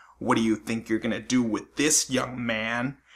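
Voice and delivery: put-on irritating, needling, really annoying voice. Telling a story about a twenty-two bullet, quoting a woman in a mock annoying tone. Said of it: "in a really annoying tone".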